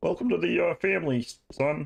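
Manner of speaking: bad put-on cartoon frog voice. Thanking a viewer for a gifted sub: bad Kermit impression. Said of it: "That was a really bad Kermit".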